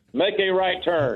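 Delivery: sat-nav voice. Joking after being told the voice could guide someone: GPS navigation voice. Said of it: "your G P S voice will get me there".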